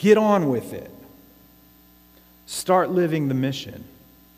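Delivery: firm, severe tone. Addressing the listeners in what his daughter calls his stern voice. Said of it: "that's your stern voice".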